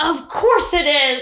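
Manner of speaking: heated, fed-up slow delivery. Retelling a woman's reaction to finding the place closed, mimicking an exasperated remark. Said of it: "she was just so heated up by it".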